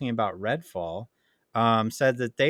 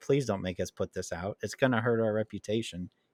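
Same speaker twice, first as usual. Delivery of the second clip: mock begging, lower and quieter; 3 semitones lower, 5 dB quieter than usual. Picturing developers in a boardroom asking Microsoft: imitating pleading.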